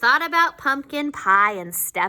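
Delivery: ordinary delivery, nothing marked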